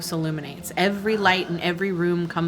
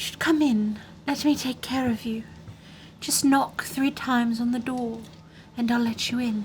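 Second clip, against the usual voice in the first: put-on high, crone-like old hag voice, calling out; 5 semitones higher, 3 dB quieter than usual. Voicing someone calling from inside the house to the players, in a hag voice. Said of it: "Are you really listening to a hag voice?".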